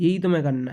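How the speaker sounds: ordinary talk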